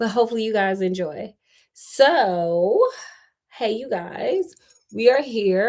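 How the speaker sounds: slightly hoarse, casual, with drawn-out "so". Greeting the audience while getting over an illness, in a slightly hoarse voice. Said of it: "I'm gonna be a little hoarse".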